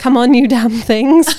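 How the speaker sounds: very loud, fed-up, impatient shouting bellow. Retelling how David Jason shouts at his tomato plants: imitating David Jason shouting. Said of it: "he can hear himself shouting at them".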